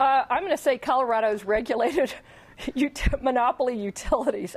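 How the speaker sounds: laughing while speaking. Giving her answer right after another panelist's, laughing. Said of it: "I'm laughing about Joey".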